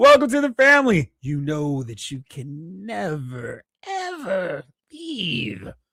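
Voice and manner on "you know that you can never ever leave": extra-creepy, hushed, very slow and drawn-out. Welcoming a newcomer to the family, with a little extra creepiness. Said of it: "add a little bit of extra creepiness".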